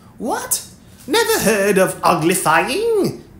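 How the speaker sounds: open surprise, high, swooping exclamation. A creature reacts after someone says she never heard of a word: surprised exclamation. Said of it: "It exclaimed".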